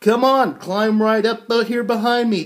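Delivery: eager, enthusiastic rallying voice.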